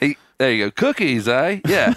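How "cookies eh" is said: put-on casual, relaxed Australian-accented delivery. Joining in on a retold story: imitating an Australian accent. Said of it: "he's Australian".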